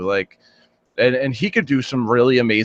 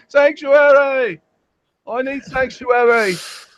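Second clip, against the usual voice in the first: clumsy British accent, very high and very slow; 13 semitones higher, 5 dB louder than usual. Speaker acting out what people run around saying: bad british accent. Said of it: "I can't do a good British accent".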